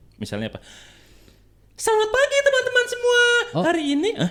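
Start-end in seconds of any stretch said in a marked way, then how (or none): 1.8-4.3 very high, loud head-voice falsetto. Asked in a challenge to show a high voice, greeting everyone in falsetto. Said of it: "Falsetto ya itu".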